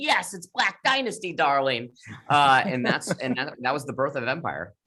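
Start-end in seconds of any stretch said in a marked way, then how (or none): 0.0-1.9 put-on excited scream, higher. Retelling a pitch meeting's reaction: screaming in the Lee Daniels way. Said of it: "screaming in the Lee Daniels way".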